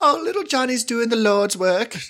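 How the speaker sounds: put-on very high-pitched voice with British accent. Retelling a Facebook story, the speaker quotes a woman's reply in a British accent. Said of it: "Why is she British?".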